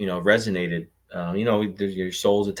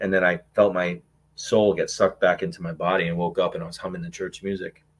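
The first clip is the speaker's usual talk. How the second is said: usual speaking voice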